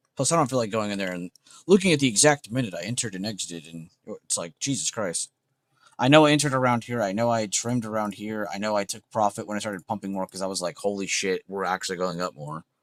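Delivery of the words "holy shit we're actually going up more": ordinary delivery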